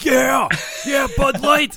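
put-on very high, giddy, overexcited cheer. Imitating a commercial guy pumping his fist with a beer: imitating overexcited fist-pumping cheer. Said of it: "pumping his fist like".

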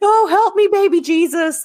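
very high, slow, drawn-out scream. Quoting a movie line while describing the voice wanted: Ricky Bobby voice. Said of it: "the Ricky Bobby voice".

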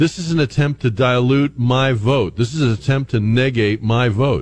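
ordinary delivery

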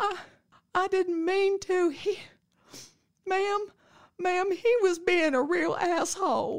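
put-on crying girl voice. Retelling what she said when she turned around, imitating her crying. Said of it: "She's crying".

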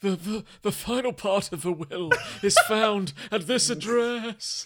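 very high, slow voice fading away to nothing. Acting out a dying pie giving its last words: fading dying pie voice. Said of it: "you bite in and go".

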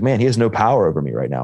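ordinary talk, nothing marked

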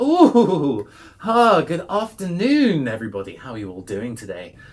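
in-character voice, loud and booming, swooping around. Voicing a character greeting the players through a holographic drone: Automator character voice. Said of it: "And he greets you all and is like".

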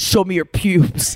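put-on deepening voice. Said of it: "with his deepening voice".

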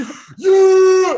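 very loud, high, drawn-out top-of-the-lungs yell. Speaker tells Haley about running around the house, re-enacting a full-lungs yell. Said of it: "At the top of my lungs".

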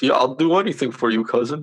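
dopey, simple-minded, dim-witted voice. Mocking someone who sounds like an eager cousin: idiot cousin voice. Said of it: "he sounds like an idiot cousin who's like".

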